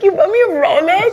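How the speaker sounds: tearful, very high, loud sobbing with disbelief. Retelling getting a rolex from dad, the speaker imitates own sobbing. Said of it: "I was sobbing".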